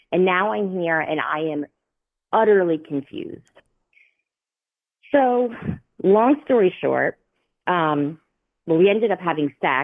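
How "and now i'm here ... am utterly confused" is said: ordinary talk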